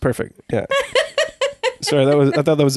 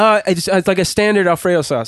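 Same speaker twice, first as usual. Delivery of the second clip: usual speaking voice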